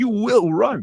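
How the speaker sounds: very high, loud screaming yell. Retelling forcing himself on a treadmill: imitating himself screaming. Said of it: "screaming at myself".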